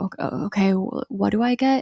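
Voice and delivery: trembling, shaky voice, slow, halting on each word. Retelling a scene where a passenger asks what to buy: imitating a trembling voice. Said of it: "trembling voice in the passenger seat".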